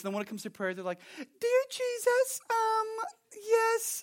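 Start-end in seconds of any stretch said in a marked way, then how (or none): 1.2-4.0 put-on very high, girlish teen-girl voice. Imitating people with manly voices when they pray: girlish put-on praying voice. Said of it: "now you're talking like a 16-year-old chick".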